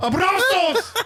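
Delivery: high, belted-out shout, all-caps loud.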